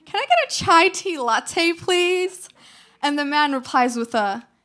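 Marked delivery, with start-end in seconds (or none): 0.1-2.5 put-on, high, swooping Valley Girl accent. Retelling ordering your chai latte at a Starbucks counter, Valley Girl accent. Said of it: "in my oh-so Valley Girl accent".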